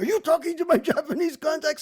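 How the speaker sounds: harsh, loud, very high, shrill barked delivery. Retell how he cut in before Terry could finish and questioned you, imitating Hayam barking. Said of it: "Hayam barks at me".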